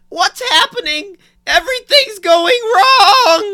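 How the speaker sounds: very high, loud, slow, drawn-out voice. Asked to do the line again, performing a Garrett impression. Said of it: "Let's hear it again".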